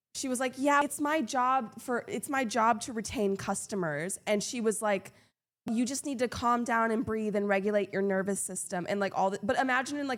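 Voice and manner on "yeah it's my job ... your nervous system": usual speaking voice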